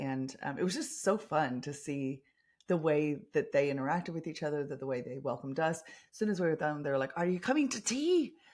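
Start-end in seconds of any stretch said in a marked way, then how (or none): 7.2-8.3 bad put-on Scottish accent, pitched very high. Retelling how the people who welcomed them asked them to tea, in a terrible Scottish accent. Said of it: "terrible, terrible accent".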